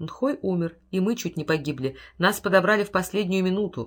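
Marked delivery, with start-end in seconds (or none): none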